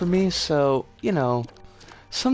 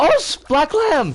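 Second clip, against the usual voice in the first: voice cracking, much higher, louder; 12 semitones higher, 6 dB louder than usual. Speaker calling out a greeting, voice cracking. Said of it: "my voice cracked".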